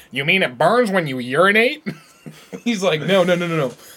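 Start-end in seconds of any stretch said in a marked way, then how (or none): 0.2-1.9 put-on voice, pitched higher.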